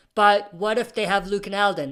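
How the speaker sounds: ordinary delivery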